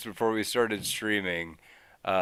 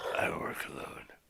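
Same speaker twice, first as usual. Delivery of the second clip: whispered, put-on character voice. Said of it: "I'm Batman".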